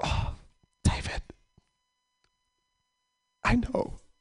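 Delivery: breathy, hushed, soothing whisper with sympathy. Retelling coworkers comforting a crying colleague: imitating people comforting someone. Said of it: "comforting him".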